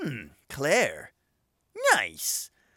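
silly, goofy voice with wildly swooping pitch. Retelling a game scene, quoting Steve Burnside: silly Steve Burnside voice. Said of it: "the silliest fucking voice you've ever heard".

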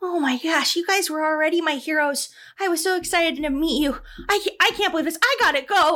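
near tears, tearful and overwhelmed outpouring. Retelling how he reacted when handed a dagger, imitating someone near tears. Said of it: "he looks like he's going to start crying".

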